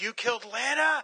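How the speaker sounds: mock very high, shrill, enraged, furious scream. Retelling how Superman learns Lana is dead, imitating Superman screaming. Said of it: "he starts screaming".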